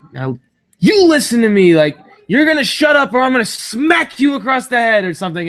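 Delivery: play-acted loud, high-pitched, fed-up, threatening yell. Recounting how a fed-up man started yelling at the speaker: retelling someone yelling. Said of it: "he starts yelling at me".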